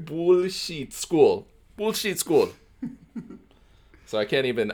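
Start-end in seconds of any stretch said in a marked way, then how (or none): 0.0-2.5 fake, high-pitched Russian accent, read phonetically. Reading a character's angry words aloud from a book; fake russian accent. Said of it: "I'm trying to read this phonetically to get the Russian accent".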